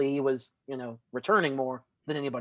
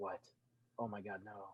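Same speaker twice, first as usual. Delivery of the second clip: very soft, low, stunned reaction. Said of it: "Alex is just like".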